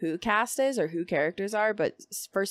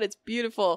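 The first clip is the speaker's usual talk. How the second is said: normal talking voice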